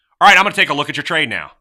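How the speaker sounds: high, loud, fast, bright, eager tone. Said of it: "listen to the difference in these three".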